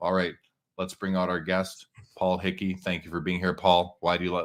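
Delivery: low, flat, sleepy monotone with no variation. Showing a guest introduction that would put people to sleep, in flat monotone. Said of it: "you can be monotone the whole time and just like".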